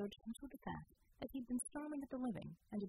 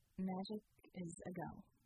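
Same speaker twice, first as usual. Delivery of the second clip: plain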